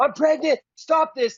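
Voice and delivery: put-on woman screaming. Speaker recounting a fight, quoting a pregnant lady, imitating a pregnant woman screaming. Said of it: "She's screaming".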